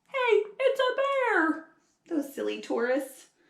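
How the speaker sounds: put-on effortful Australian accent. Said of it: "trying really hard to do an Australian accent".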